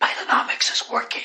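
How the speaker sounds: whispered, pitched very high. Repeating a slogan while hosting a price-guessing game: whispering. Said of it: "Who are you whispering to?".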